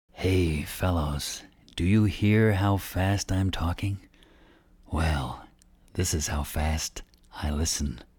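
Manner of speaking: very slow, deliberate, each word drawn way out. One fellow answers a controller's rapid-fire clearance on his microphone, very slowly. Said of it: "very slowly".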